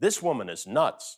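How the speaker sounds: normal talking voice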